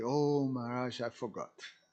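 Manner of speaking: ordinary delivery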